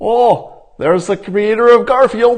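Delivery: very high, shrill, sneering, mocking troll voice. Showing how a troll's insult sounds when read: mocking troll voice. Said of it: "the voice sounds like this".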